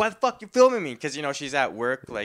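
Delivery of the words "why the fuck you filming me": shrill, high, loud furious angry shout. Retelling a worker's words when she gets mad at being filmed: imitating someone getting mad. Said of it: "and then she just gets mad".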